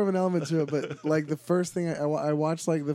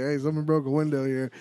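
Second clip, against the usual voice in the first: ordinary talk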